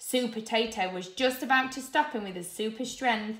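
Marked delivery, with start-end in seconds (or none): none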